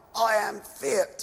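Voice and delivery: hoarse, scraping, rasping voice. Retelling words overheard from next door, imitating a rasping voice. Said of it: "sort of rasping like".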